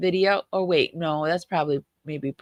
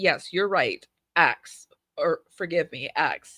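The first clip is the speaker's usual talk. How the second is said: put-on fussy, pedantic know-it-all tone. Playing the straight-a student who must correct every little error, mock pedantic correcting. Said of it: "somebody who must correct everybody's little error".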